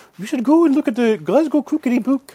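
Highland Scottish speech, very high and loud. Speaker retells a Highland woman's answer to his question, in a Scottish Highland accent impression. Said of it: "in her wonderful Highland accent".

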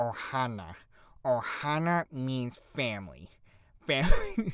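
swooping, drawn-out cartoon voice, swinging pitch. Talking about dressing up as Stitch, doing a Stitch voice. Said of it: "I can't do a very good Stitch impression".

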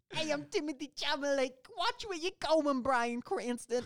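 very high-pitched, fake New York accent. Joking that the actor is from New York, speaking as him; Timothée Chalamet, mock New York accent. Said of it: "Hey, New York. I'm walking here".

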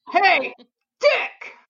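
loud, high outside voice calling out. Speaker retelling how a man first called out to him, retelling a loud call. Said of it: "he used his outside voice".

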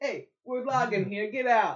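put-on New York accent. Retelling how someone was told to get out, said like a New Yorker. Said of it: "Said like a New Yorker".

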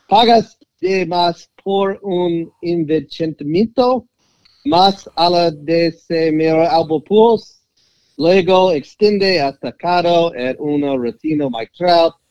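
Spanish with Texas accent. Reading a passage aloud in Spanish: Texas Spanish. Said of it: "there's that Texas Spanish that I'm so proud of".

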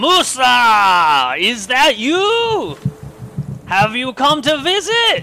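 very high, loud sing-song gnoll call, drawn out, rising. Narrating a tabletop game, voicing a gnoll that calls out to the group. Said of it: "A voice calls out".

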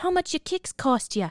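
put-on classic New York accent. Retelling a story where Amy asks about kicks, imitating Amy's New York accent. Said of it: "Amy has got that classic New Yorker accent".

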